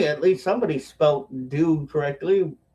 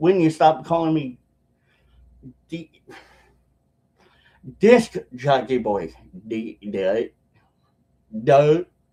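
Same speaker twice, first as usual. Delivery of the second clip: tongue-tied, very slow, low, tripping over D; 2 semitones lower than usual. Answering a chat comment while tired, tongue-tied stumbling. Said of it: "I'm getting tongue-tied".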